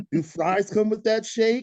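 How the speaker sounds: put-on New York accent, very high and loud. A construction worker catcalling Barbie, in a New York accent. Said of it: "I have a New York accent".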